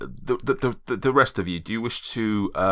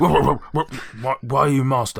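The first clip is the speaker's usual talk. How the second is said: put-on dog voice, much higher; 5 semitones higher, 4 dB louder than usual. In a long campaign, a player speaks as a dog to its master, dog voice. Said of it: "I can't even do a dog voice at this point".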